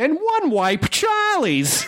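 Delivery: very high, swooping 1930s gangster voice. Reading a product name in an ad: 1930s gangster voice. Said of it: "I'm going to do in like a 30s gangster voice".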